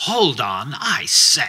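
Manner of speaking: irked woman's voice, very slow and drawn out. Retelling a woman caught on a hallway camera after he tripped, imitating an annoyed woman. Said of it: "And she's so annoyed with me".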